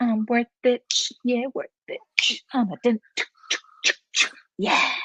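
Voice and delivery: sassy gangster-style delivery. Showing how the phrase should really be said: sassy gangster-style delivery. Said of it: "proper sassy gangster style worth it".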